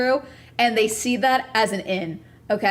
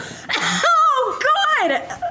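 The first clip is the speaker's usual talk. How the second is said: shrill, very high, swooping yelled outburst. Telling viewers a story about his answer, the speaker breaks into yelling. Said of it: "Sorry, I'm yelling".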